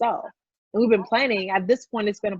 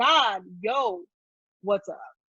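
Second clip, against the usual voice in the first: slow, gangster-style street thug voice. Retelling a prayer from a frustrated time: imitating a gangster way of talking. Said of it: "talking to God in a gangster way".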